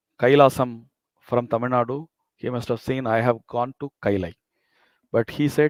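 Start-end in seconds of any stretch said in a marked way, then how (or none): none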